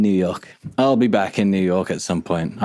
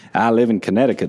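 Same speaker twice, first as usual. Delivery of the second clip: fake accent from the American South. Asking someone in new york to grab a drink, in a southern american accent. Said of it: "I'm going southern now".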